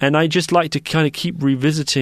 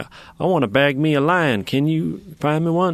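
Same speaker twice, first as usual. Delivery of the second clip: mock American hunter voice, slower. Speaker acting out international hunters coming to a game farm, put-on American hunter voice. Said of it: "They don't always talk like that".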